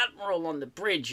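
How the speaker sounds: plain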